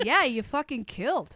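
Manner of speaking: sarcastic undertone. Showing how to tell a comic after a silent set: sarcastic undertone. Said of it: "That's where sarcastic undertone comes in".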